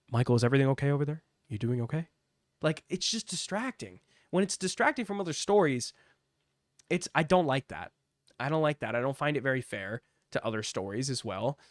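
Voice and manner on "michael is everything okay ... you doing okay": muttered aside. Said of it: "you have Joe Test going".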